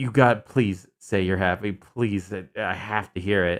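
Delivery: desperate, pleading, begging tone. Imitating how a character just sounded: imitating a desperate plea. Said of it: "he's desperate. You can hear it in his voice".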